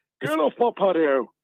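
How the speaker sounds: sudden posh voice, pitched way up very high. Interrupting the group as Tommy Walsh, in a posh Tommy Walsh impression. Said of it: "You sound quite posh all of a sudden".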